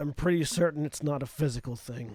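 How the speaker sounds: character voice through clenched teeth. Player speaking as their character during a tabletop game, Phage through gritted teeth. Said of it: "like through gritted teeth".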